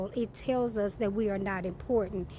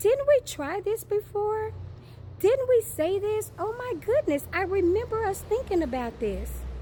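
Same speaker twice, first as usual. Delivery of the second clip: very high, sweet, fake innocent tone; 11 semitones higher, 4 dB louder than usual. Teaching listeners how to say it, in a mock-innocent passive-aggressive tone.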